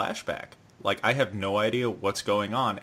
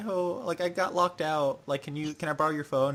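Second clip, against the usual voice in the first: put-on high, sugary, sweet, innocent voice; 6 semitones higher than usual. Retelling a scene from the show, quoting her: imitating a sweet voice. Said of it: "she's all sweet".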